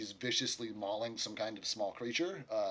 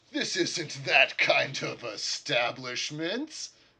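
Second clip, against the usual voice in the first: laughing, slightly overloud; 4 semitones higher, 5 dB louder than usual. Voicing Jakar answering a request for privacy, Jakar laughing, a little too loud. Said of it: "laughs and says a little too loudly".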